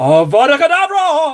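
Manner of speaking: very high, dramatic wizard's spell-casting cry. Holding a paintbrush as a wand, attempted spell-casting impression. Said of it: "I can't do the impression".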